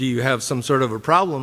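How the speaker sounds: plain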